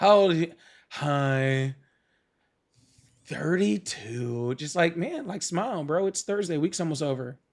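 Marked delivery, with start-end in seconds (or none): 0.0-4.6 play-acted depressed, gloomy tone, Hi drawn out. Mocking how the caller answered, imitating a depressed caller. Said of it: "You sound, like, real, like, depressed, like, Eeyore".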